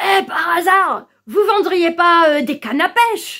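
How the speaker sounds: put-on Alsatian accent. Retelling what a man said on opening the door, in an old Alsatian accent. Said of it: "il avait un vieil accent alsacien".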